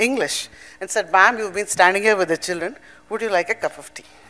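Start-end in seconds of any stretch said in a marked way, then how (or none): none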